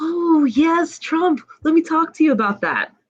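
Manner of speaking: put-on very high, cuddly, sweet, friendly tone. Retelling what a once aggressive man in a Trump shirt said: imitating a cuddly friendly man. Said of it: "he was like a big cuddly teddy bear".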